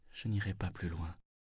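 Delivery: very soft, very calm. A man sitting down in the road refuses to go further: very softly, very calmly. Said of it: "Très doucement, très calmement".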